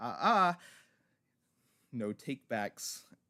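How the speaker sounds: loud, hoarse, rasping demon voice. Narrating a game scene, a voice booms in a player's head: raspy demonic voice. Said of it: "you hear a raspy demonic voice say".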